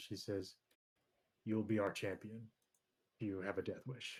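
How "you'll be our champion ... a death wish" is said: hushed whisper. A game master voices a character answering the player, whispering back. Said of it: "she kind of whispers back at you".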